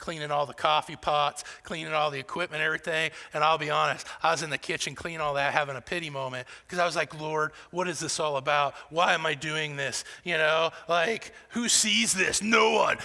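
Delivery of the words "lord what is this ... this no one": acted mad voice, angry and griping. Retelling a pity moment while cleaning the kitchen: retelling own mad voice. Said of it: "It must be my mad voice".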